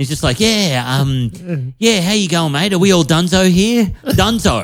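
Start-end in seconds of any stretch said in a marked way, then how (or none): 0.4-3.9 mock overly chummy, matey waiter voice. Retelling a cafe waiter's greeting: imitating an overly chummy waiter. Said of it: "talking to you like he's your mate".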